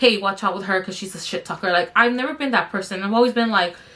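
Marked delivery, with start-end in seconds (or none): none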